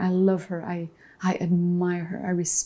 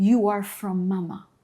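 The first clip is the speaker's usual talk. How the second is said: ordinary talk, nothing marked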